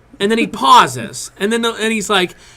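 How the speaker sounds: ordinary talk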